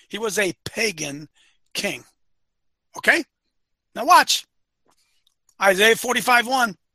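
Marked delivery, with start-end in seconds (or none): 0.1-2.0 very slow, low, deliberate, word by word. Speaker repeats his point to Dylan a second time, very slow. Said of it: "I'm going to say it again really slow".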